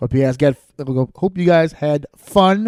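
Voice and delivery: stumbling, tripping stutter with restarts. Host closing episode thirteen and thanking listeners, stuttering. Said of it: "I'm stuttering now toward the end here".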